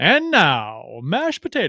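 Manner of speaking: very slow, stretched words, swooping pitch, grand announcer style. Retelling a commercial where the announcer does his voice: Michael Buffer announcer voice. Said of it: "doing his voice about the mashed potatoes".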